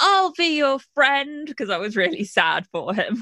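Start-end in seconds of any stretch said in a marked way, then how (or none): 0.0-1.5 high-pitched yelled call. Retelling calling out to a pantomime villain as a young kid, imitating a yell. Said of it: "And I yelled".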